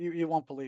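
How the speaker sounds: usual speaking voice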